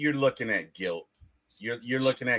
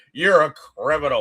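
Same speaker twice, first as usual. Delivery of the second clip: put-on disappointed tone, higher and louder; 3 semitones higher, 8 dB louder than usual. Retelling a movie line by War Machine: imitating War Machine sounding disappointed. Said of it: "he was so disappointed".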